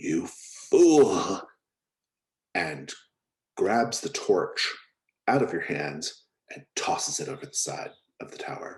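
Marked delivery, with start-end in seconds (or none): 0.0-1.4 very loud hiss at full force. Voicing a figure who grabs a torch from a player: hissing. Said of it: "someone hisses".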